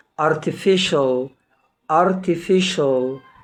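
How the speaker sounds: slow, careful artificial with the ci said as sh.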